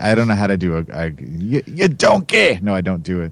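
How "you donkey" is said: very high, blurted cartoon ogre voice. Trying a TV chef's voice but slipping into Shrek voice. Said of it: "that was Shrek".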